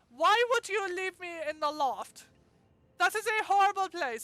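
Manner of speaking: put-on British accent. Playing the one a child wants to hide in the loft: put-on British accent. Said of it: "I don't even know if that was a proper British accent".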